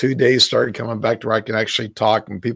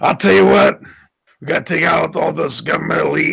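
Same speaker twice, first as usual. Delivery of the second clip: rough, unhinged, crazy rasp, pitched up, wild; 6 semitones higher, 3 dB louder than usual. Answering a remark on the voice with a raspy Alex Jones voice. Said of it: "that crazy, raspy Alex Jones voice".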